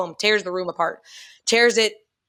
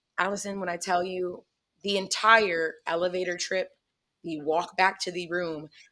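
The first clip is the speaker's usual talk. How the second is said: normal talking voice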